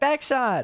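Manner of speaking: mock excited exclamation. Mocking a word written with three exclamation points, mock-excited exclamation. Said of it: "Like you're excited".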